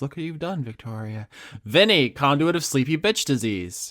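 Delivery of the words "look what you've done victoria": fast, very quiet, hushed murmur. Continuing the bit, the speaker addresses someone in a quiet voice. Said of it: "I just still in quiet voice".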